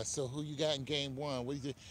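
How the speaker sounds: usual speaking voice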